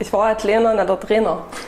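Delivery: broad Saxon dialect, vowels shifted. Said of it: "Dann sag mal in deinem Dialekt".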